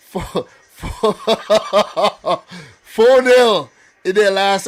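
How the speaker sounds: talking through laughter. Doing a match preview, laughing while talking. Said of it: "I can't help it".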